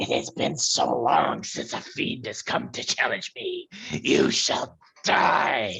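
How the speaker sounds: loud, rasping, hissing monster creature voice. Game master voicing a creature on its turn in a tabletop game, hissing. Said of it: "the creature hisses".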